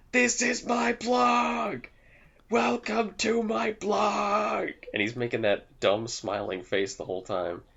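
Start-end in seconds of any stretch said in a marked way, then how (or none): 0.1-4.7 acted-out very high, very slow, drawn-out yell. Retelling a video where an actor screams about his blog: imitating someone screaming at the top of his lungs. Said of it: "he's screaming in English at the top of his lungs".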